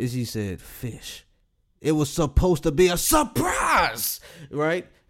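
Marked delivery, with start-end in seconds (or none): 0.6-4.2 mock angry, hushed, pissed-off whisper. Retelling what she said after the pause: imitating an angry reply. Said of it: "she was pissed".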